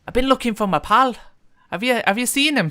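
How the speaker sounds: put-on loud Irish accent, pitched very high. Retelling what a man said on coming into the apartment: irish accent. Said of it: "the same Irish voice".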